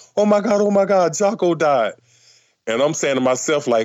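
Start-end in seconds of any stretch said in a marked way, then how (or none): 0.2-2.0 put-on crying, higher. Retelling a friend's news that a musician died: imitating a crying friend. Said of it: "He was literally crying".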